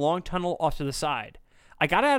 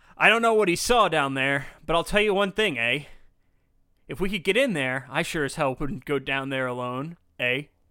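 put-on Canadian accent with tag-on eh. Reading out a quote from a sewer worker, in a Canadian accent. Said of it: "Because he's Canadian".

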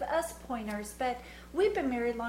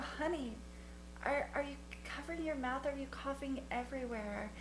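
mock sugary-sweet, honeyed voice, hushed, very soft; 9 dB quieter than usual. Retelling asking a coughing man if he covers his mouth, mock-sweet delivery. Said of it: "my delivery was so sweet".

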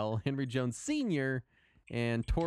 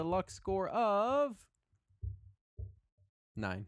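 defeated, let down, high swooping tone; 6 semitones higher than usual. Reading out a character's rolled stats to the group, defeated. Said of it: "I didn't mean to sound so defeated".

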